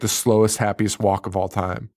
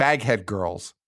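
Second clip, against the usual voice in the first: ordinary talk, nothing marked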